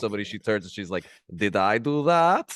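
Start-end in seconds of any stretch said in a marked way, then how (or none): 1.3-2.5 put-on Russian accent, very slow and drawn out. Describing a Russian assassin character, quoting her line after a kill, Russian accent. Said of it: "And in her Russian accent".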